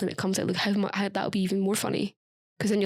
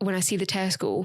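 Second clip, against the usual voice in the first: ordinary delivery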